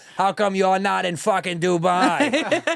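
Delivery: loud, slow tough-guy mafia boss voice. Retelling what a drunk woman asked in a parking lot, mafia boss voice. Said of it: "Like a mafia boss".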